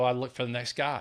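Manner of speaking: usual speaking voice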